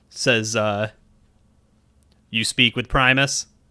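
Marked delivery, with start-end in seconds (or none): 2.3-3.5 hollow, mechanical, robotic voice from afar. Game master voicing a lead guard answering a player: robotic hollow distant tone. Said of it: "that robotic, hollow tone from a distance".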